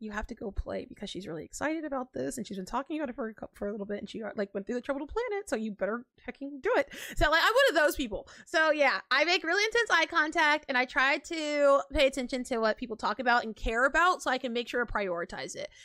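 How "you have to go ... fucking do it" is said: hushed, soft half-whisper under the breath. Retelling urging others at Christmas to play a game: imitating own half-whisper. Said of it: "I'm, like, whispering".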